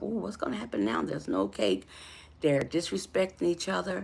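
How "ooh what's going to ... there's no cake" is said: frightened, anxious, uneasy ooh with wondering tone. Retelling own reaction after the cake was slapped off the table: retelling own scared reaction. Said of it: "was I scared at that point".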